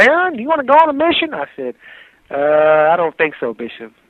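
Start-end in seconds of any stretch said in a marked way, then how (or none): 0.0-1.3 put-on kindly, pleasant Southern US accent, pitched very high. Retell your bishop asking you about a mission, in Bishop Love's nice southern accent. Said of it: "in his nice southern accent".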